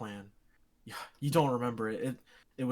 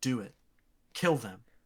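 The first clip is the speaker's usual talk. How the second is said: urging stage half-whisper. Narrating a voice that wriggles into your ear, half-whispering. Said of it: "it just whispers to you".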